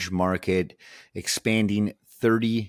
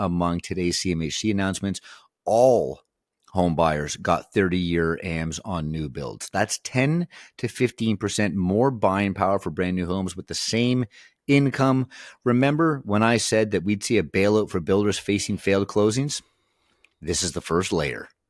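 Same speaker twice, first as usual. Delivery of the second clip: ordinary delivery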